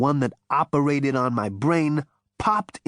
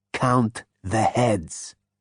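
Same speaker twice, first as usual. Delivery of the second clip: low, hoarse, rasping voice; 3 semitones lower than usual. Reading a novel aloud, Zaphod answers the insect: low rasp. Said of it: "said Zaphod in a low rasp".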